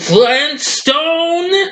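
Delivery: very high, shrill cartoon scream. Retelling how the boss screams the name: imitating Mister Slade screaming. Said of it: "screams out that name".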